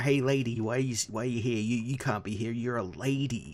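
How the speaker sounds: put-on thick forties-style New York accent. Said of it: "thick nineteen forties era New Yorker accent".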